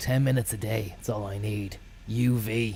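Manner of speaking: normal talking voice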